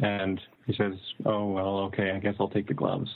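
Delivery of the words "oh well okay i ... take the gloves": usual speaking voice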